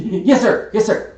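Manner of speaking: put-on very high little boy voice, drawn out. Voicing a halfling servant boy answering his master: halfling boy voice. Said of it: "you hear a little halfling puttering real quick, and he's".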